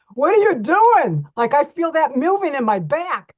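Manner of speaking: high, loud, startled scream. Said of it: "they're, like, starting to scream".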